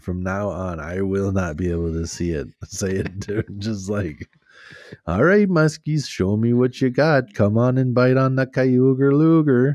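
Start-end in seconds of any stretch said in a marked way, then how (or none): 5.1-9.8 loud, pitched-up, put-on Minnesota accent. Asked to say it in the minnesota accent, calling to the muskies, minnesota accent. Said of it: "in the Minnesota accent".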